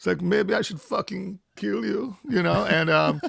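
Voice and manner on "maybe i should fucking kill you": rough, oddball, high, creaky put-on voice. Imitating the German tour manager's way of talking: imitating Frieder. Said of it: "he fucking talks like this".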